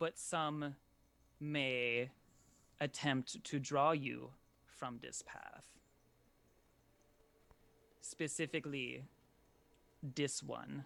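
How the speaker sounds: grave, very serious. A narrator voices a card-reading character speaking to a player, very serious. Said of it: "very seriously".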